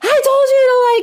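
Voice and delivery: very high, shrill, loud, at-wit's-end scream. Retelling how she finally reacts when her son isn't listening, re-enacting a scream. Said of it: "it's a scream".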